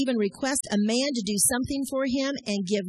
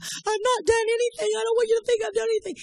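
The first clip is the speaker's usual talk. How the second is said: very high-pitched, tearful, crying delivery, acted out; 11 semitones higher than usual. Retelling what was said to the pastor, retelling own words while crying. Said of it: "I'm crying".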